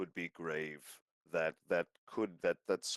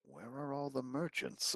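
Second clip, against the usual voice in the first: hushed, soft little half-whisper; 6 semitones higher, 5 dB quieter than usual. Walking into the library, a player half-whispers a question to Javi, little half-whisper. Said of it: "make a little whisper to Javi".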